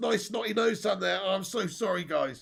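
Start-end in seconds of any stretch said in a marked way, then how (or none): none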